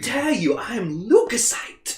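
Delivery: put-on prim, stiff British accent. Speaker acts out the voice they gave a character, in a put-on uptight British accent. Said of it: "really like uptight British accent".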